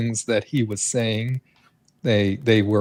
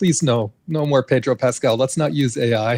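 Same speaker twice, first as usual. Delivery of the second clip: usual speaking voice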